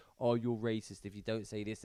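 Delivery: ordinary talk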